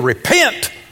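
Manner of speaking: heavy stress on -pent of repent. Imitating people holding a big Bible: heavy stress on pent of repent. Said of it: "You have to put the emphasis on the last syllable".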